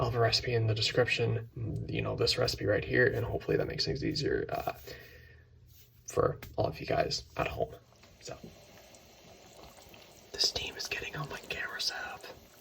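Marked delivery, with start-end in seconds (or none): 10.3-12.2 soft whisper. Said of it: "Why am I whispering?".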